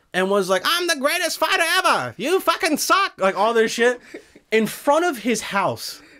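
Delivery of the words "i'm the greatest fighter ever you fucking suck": very high-pitched shout through a megaphone. Retelling a boxer taunting his rival through a megaphone: imitating Muhammad Ali yelling through a megaphone. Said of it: "loud microphones".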